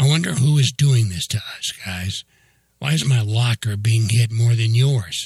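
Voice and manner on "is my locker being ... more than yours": ordinary delivery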